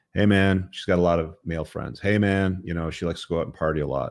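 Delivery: plain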